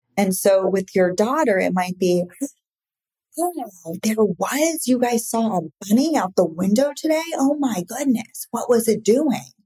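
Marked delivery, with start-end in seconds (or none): 3.3-9.4 eager, excited, enthusiastic swooping voice. Showing a parent how to respond to their daughter, with an enthusiastic voice. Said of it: "like enthusiasm in your voice".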